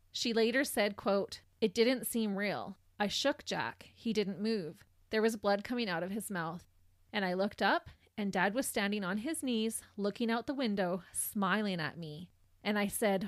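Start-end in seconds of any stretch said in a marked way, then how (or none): none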